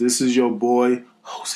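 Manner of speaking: whispering. Introducing oneself at the start of an episode: whispering. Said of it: "Why you whisper like that?".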